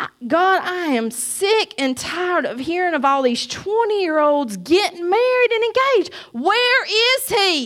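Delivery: angry, tearful sobbing outburst. Retelling crying angrily while driving in the rain: imitating own past angry crying. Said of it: "squalling my eyes out, mad".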